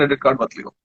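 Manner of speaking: ordinary talk, nothing marked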